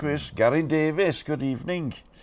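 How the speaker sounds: put-on Welsh accent with a lilting tune. Host reading out the names of callers who are on, in a put-on Welsh accent. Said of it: "saying Garin Davis into the Welsh accent".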